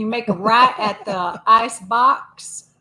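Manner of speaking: put-on rural country accent. Asked to be the country hick GPS, giving directions, country hick accent. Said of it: "You gonna be the country hick GPS?".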